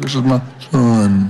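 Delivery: divine voice, as if from the heavens. Quoting the voice from heaven at the baptism: God voice. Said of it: "Is that a good God voice right there?".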